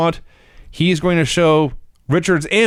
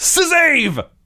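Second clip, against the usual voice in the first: put-on, shrill, very high-pitched yell; 12 semitones higher than usual. Recounting a match, act out a wrestler turning to the heel corner, imitating a shout. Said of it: "turns to the heel corner and shouts".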